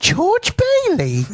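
drawn-out high voice. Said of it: "I don't think he actually said crappy".

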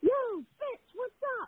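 very high, shouted call-out yell. Retell how Foley spotted you trying to walk in inconspicuously, acting out his yell. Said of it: "Foley yells".

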